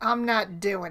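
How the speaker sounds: mock Southern US accent. Quoting a Snapchat woman's catchphrase, imitating a Southern accent. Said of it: "she's got a Southern accent".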